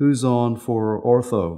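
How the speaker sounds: ordinary delivery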